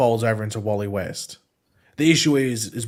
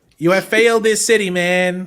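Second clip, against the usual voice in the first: loud, put-on, attempted casual American accent; 8 semitones higher, 7 dB louder than usual. Showing for casting whether he can do a convincing put-on american accent. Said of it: "a convincing American accent?".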